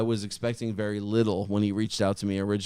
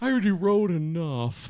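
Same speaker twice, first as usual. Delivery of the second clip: character voice pitched up high; 9 semitones higher than usual. Imitating Brian complaining about writing vocals: Eeyore voice. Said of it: "He's like Eeyore".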